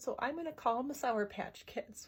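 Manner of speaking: plain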